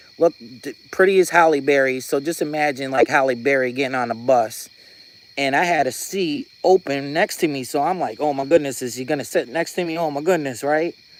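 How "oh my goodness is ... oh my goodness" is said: normal talking voice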